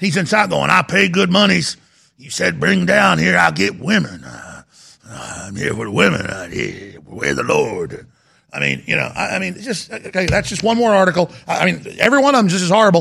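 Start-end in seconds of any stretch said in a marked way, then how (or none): 0.7-8.1 put-on sing-song backwoods hillbilly voice with swooping pitch. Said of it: "I'm not trying to talk like a hillbilly".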